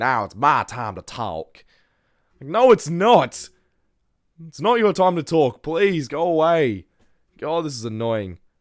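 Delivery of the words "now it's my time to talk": mocking, put-on Texas accent. Mocking a podcaster's line after complaining about it: imitating Haley Welch's Texas accent. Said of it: "The Texas accent is really making this".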